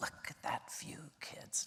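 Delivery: soft, hushed whisper.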